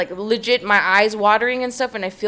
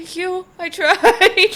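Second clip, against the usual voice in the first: play-acted, very high, slow, drawn-out choked-up voice; 9 semitones higher, 4 dB louder than usual. Retelling thanking a manager for a compliment: imitating own emotional voice. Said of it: "I'm getting so fucking emotional".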